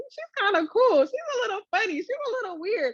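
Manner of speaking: high, impressed voice. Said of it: "the more that people are like".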